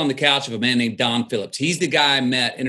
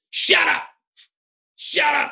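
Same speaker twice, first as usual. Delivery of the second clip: play-acted harsh, rough, angry snap, pitched very high. Retelling asking Don for an agent meeting, the speaker imitates him snapping. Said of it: "he snapped at me and goes".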